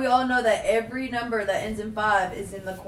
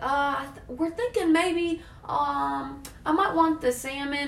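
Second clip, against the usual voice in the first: halting, unsure, indecisive, very slow speech; 5 semitones higher, 3 dB quieter than usual. Retelling how customers answer at the table: imitating an indecisive customer. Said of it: "And they're like".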